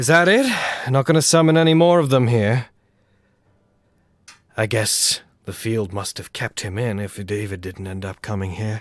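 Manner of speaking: melancholy distorted voice. Describing a game where a voice comes through the screen, mock-melancholic character voice. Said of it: "very melancholically being like".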